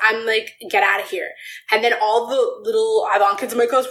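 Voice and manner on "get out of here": put-on angry outburst voice. Retelling a confrontation with a teacher in class: retelling own angry outburst. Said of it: "Why are you getting so angry?".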